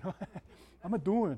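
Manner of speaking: put-on Chicago-style accent. Advising listeners what to ask a close friend, in a chicago accent. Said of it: "You need the Chicago accent".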